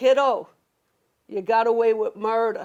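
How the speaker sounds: imitated deadpan delivery. Retelling what he said after reading the speaker's scans, imitating a deadpan delivery. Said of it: "He's deadpan".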